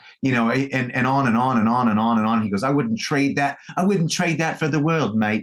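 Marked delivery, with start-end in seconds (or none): 2.6-5.4 put-on English accent with the voice pitched slightly higher. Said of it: "I got to work on my English accent".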